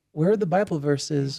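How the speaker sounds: ordinary delivery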